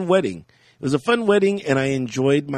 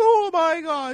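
put-on British accent, much higher, slower; 11 semitones higher, 4 dB louder than usual. Retelling how the lookalike's wife flipped out, imitating a British accent. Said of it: "She's all in a British accent".

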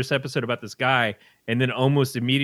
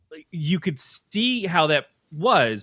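ordinary delivery

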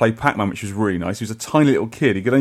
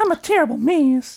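cowboy Texas accent, pitched very high. Asked to say a line in that voice, doing a Sunset Riders Texas accent. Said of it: "in a Texas accent".

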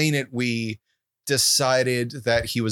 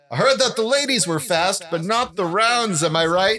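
put-on fight announcer voice, higher pitch; 8 semitones higher than usual. Voicing a fight announcer named Smitty Quinn on the microphone between rounds: Smitty Quinn announcer voice. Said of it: "Smitty Quinn gets back on the microphone and says".

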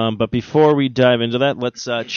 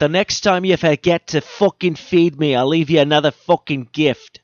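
put-on Scottish accent in a cat voice; 3 semitones higher than usual. Voicing a cat glaring at its owner who came home: Scottish accent. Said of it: "he has a Scottish accent".

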